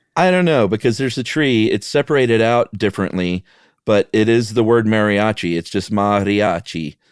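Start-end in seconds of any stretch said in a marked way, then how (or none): 5.5-6.9 Italian-sounding pronunciation. Pronouncing the word mariachi for the other speaker: sounding Italian. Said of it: "That sounded Italian".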